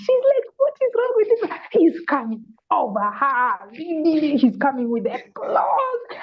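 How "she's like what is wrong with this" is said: put-on very high, terrified, frightened voice. Retelling a woman's reaction to a man in a lion mask: imitating a terrified woman. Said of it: "She was terrified".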